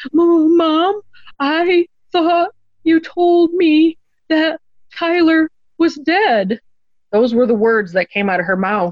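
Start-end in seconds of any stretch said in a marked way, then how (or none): 0.1-6.6 put-on very high, very slow, tiny, shaking toddler voice. Retelling her 3-year-old's answer after asking what's wrong, imitating tiny girl voice. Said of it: "saying this in her tiny little 3-year-old girl voice, shaking".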